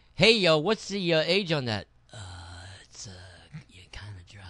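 put-on young stoner voice. Mocking a co-host's question about a whiskey's age, in a 19-year-old stoner voice. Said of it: "You sound like a 19-year-old stoner".

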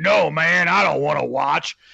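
awful dubbed voice, rough and creaky. Describing a badly dubbed video where someone refuses a watch, in an awful dubbed voice. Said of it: "this like awful voice will be like".

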